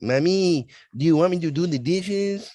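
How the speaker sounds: put-on very high-pitched child voice with Mexican accent. Imitating a spouse asking for dessert: imitating a mexican accent. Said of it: "I'll make it sound like I'm speaking Mexican".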